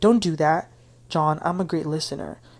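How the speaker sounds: normal talking voice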